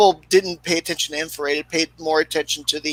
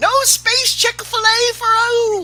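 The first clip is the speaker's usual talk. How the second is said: very high, made-up cartoon character voice; 4 dB louder than usual. Joining a joke with the group: put-on character voice. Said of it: "That's a good voice, [name]".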